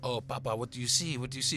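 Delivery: imitation thick Latin accent. Retelling what someone said on stepping out: imitating thick latin accent. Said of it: "the real thick, uh, Latin accent".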